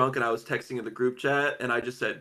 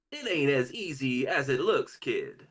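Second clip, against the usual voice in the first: very slow, stretched-out, swooping sing-song voice. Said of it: "Give me something to say as [name]".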